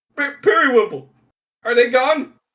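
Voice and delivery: calling out. A voice from behind the counter in the story, crying out. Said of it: "a voice behind the counter uh, cries out".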